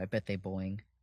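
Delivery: hushed stage whisper. Half-whispering an aside to Cosmo while walking to a booth: half-whispering in character. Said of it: "I whisper to Cosmo as I do".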